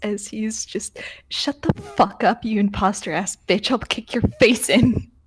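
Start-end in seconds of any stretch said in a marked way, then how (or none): 1.3-5.0 self-control snapping into a loud, furious outburst. Voicing a character whose self-control snaps, threatening an imposter: character snapping in anger. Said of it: "self-control he has left from all of this just snaps".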